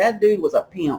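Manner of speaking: ordinary delivery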